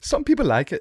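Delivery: bad, wrong put-on British accent, very high. Quoting how he delivered a line that made the speaker laugh, bad British accent. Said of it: "that was the wrong accent".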